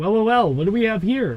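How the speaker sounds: acted confident delivery. Retelling being told to redo a line, saying it again: acting it out with confidence. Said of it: "say it with confidence".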